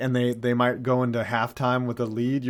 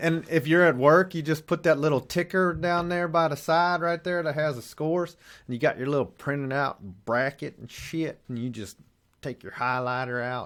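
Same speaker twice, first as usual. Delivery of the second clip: jokey, put-on Virginia accent; 3 semitones higher than usual. Describing watching the tournament scores at work, put-on Virginia voice. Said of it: "I'm still doing this voice".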